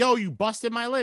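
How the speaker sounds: high put-on yell. Retelling how Tom Brady yelled about his busted lip: imitating Tom Brady yelling. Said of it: "he's yelling like".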